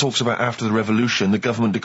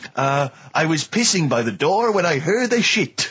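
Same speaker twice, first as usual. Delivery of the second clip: fake French accent, pitched up; 6 semitones higher than usual. Quoting a line a man once said, the speaker uses a French accent. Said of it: "I'm talking in a French accent".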